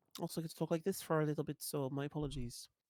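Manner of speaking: really bad, badly done put-on Irish accent. Apologizing while walking over to the other player's house: really bad Irish accent. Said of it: "Which accent is that?".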